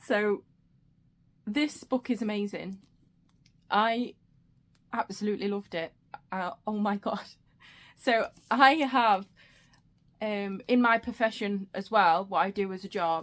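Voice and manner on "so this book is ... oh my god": fighting tears, slower pace. Reviewing a book just finished, holding back tears. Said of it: "I'm trying not to cry".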